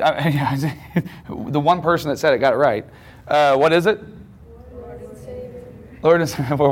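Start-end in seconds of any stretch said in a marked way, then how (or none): 4.7-5.6 very soft, unsure, timid. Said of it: "we're still not confident in that".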